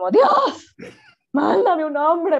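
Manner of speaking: put-on high, loud, desperate old-maid voice. Retelling her daily prayer at the gym, in a put-on desperate old-maid voice. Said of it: "de vieja desesperada".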